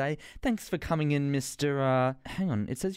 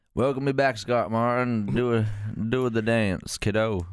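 loud, hammed-up, put-on American accent; 4 semitones lower, 5 dB louder than usual. Responding to a welcome after being asked for it: put-on American accent. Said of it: "an American accent when you responded".

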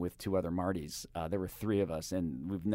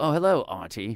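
put-on loud English accent; 4 semitones higher, 7 dB louder than usual. Retelling how musicians from england answer an introduction: imitating an english musician. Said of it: "England, ... and they go".

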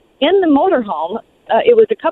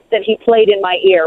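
ordinary delivery

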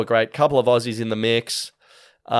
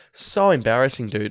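usual speaking voice

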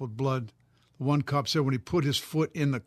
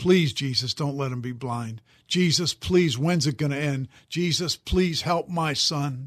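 desperate, pleading, begging cry; 3 dB louder than usual. Retelling a mother's prayer for her son: imitating a desperate cry to God. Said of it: "she was just crying out to God".

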